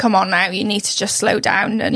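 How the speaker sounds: ordinary delivery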